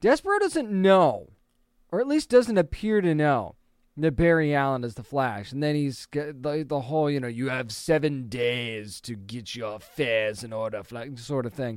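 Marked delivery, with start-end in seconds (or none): 7.3-10.8 low, hushed, soft, badly done villain voice. Recapping what Despero says to the hero, horrible Despero impression. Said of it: "that was a horrible impression".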